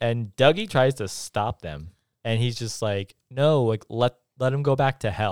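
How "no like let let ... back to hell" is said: ordinary delivery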